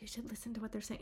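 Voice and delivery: very quiet, hushed, barely above a hush. Retelling a remark to a husband at dinner: imitating speaking very quietly. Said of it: "Or I'll say very quietly".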